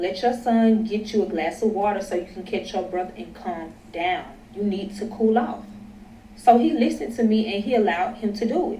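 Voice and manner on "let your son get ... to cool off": ordinary delivery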